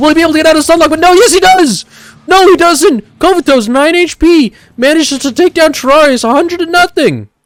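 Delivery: very high voice, breaking and cracking. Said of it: "my voice is cracking".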